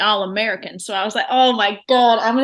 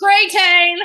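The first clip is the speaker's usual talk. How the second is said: put-on shouting, higher and louder; 9 semitones higher, 5 dB louder than usual. Retelling shouting the word backstage: retelling own shout. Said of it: "Because I'm shouting it backstage".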